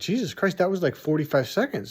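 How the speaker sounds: ordinary delivery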